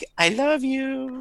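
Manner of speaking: feeble, very weak, very high-pitched little voice. Voicing a drained juice cube creature's last words: very weak voice. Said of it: "you just hear a very we-, weak".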